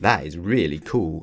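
ordinary delivery

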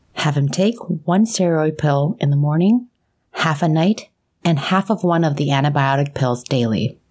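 plain reading voice

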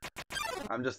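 plain

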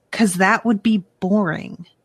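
acted scornful, disdainful, dismissive, matter-of-fact tone. Retelling a childhood reply to an uncle: imitating own disdainful reply. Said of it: "with such disdain".

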